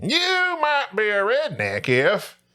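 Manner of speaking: slow, drawn-out, sing-song delivery swinging upward. Performing a requested impersonation of a comedian: Jeff Foxworthy impression. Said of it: "Let me hear the impersonation".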